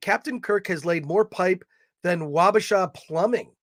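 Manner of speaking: normal talking voice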